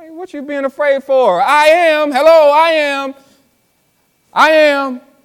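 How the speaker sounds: insistent told-you-so tone. Speaker acting out Jesus repeating himself: acting out Jesus's reminder tone. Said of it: "he's saying it in his reminder tone".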